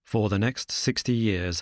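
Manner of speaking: plain reading voice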